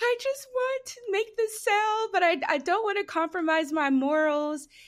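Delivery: put-on very high, sobbing, tearful crying voice. Retelling a phone call to mom, made while upset: retelling own crying. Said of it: "I'm crying my eyes out".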